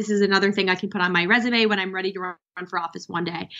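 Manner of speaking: normal talking voice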